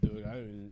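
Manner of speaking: put-on slurred speech. Retelling a phone call while drunk in a basement: imitating own drunken slurring. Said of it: "I'm slurring at this point".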